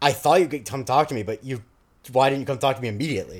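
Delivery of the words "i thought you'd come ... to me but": ordinary delivery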